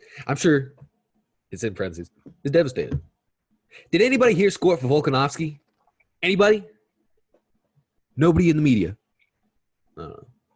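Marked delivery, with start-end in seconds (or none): 3.9-9.0 very high, loud, furious angry rant.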